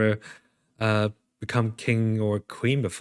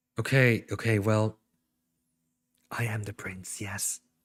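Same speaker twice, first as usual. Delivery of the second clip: hushed half-whisper under the breath; 4 dB quieter than usual. A player's character admits to being the prince, half-whispering. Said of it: "Why are you whispering?".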